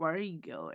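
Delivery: husky, hushed, just-woken morning voice. Narrator reads Xander, just waking up, asking a question: husky morning voice. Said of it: "He asked in a husky morning voice".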